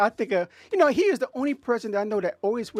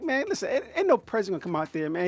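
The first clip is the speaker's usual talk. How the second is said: ordinary talk, nothing marked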